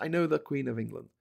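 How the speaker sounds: put-on mimicked old man's broken English. Telling of meeting an old man, the speaker quotes him, imitating broken English. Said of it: "broken English".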